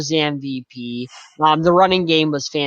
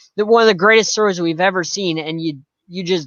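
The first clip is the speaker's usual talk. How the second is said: usual speaking voice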